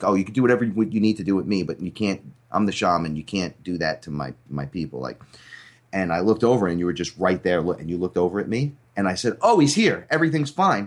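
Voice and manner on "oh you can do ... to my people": quavering, unsteady, trembling voice. Retelling what they said aloud when they couldn't find their friend, retelling with a shaking voice. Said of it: "And I even shake in my voice".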